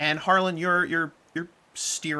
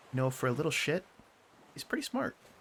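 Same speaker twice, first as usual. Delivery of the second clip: hushed half-whisper, very quiet, barely there; 5 dB quieter than usual. Leaning in toward another character, she shares a remark: half-whispering very quietly. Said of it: "she whispers and she just very quietly says".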